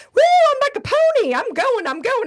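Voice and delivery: very high, loud, sing-song, swooping whooping cheer. Retelling how a friend cheered while running a marathon: imitating Lori cheering mid-run. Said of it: "And she's running like".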